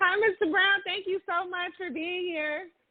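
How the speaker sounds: cheerful happy voice. A host greets and thanks a guest for being there, happy voice. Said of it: "It's a pleasure to hear that happy voice of yours".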